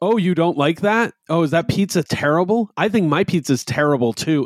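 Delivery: put-on high-pitched child voice, blurting at a shout. A parent describing a young child repeating a complaint, imitating a child yelling. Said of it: "And it's just yelling it".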